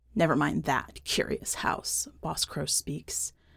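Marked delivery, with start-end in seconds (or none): 0.2-2.1 dark, sinister, dismissive voice. Reading a story, the narrator voices Boss Crow answering the curious house, sinister. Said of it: "something sinister in her voice".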